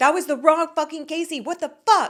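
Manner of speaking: high, furious shouting. Retelling how Brian screamed after a wrong payment: imitating Brian screaming. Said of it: "he actually was screaming".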